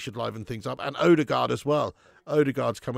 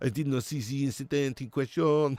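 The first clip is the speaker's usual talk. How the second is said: put-on French accent. Continuing a joke impression of a football manager: generic Frenchman voice. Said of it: "Just generic Frenchman voice".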